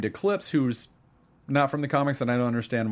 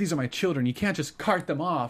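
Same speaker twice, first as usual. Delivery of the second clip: bad, terrible fake put-on woman's voice; 3 semitones higher than usual. Quoting an actress's promo line, in a terrible Amy Acker impression.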